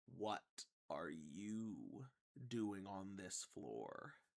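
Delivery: very slow voice, word "you" drawn out. Voicing an Illithid trooper questioning a player telepathically: Illithid's telepathic voice. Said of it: "you're just gonna hear this voice in your mind".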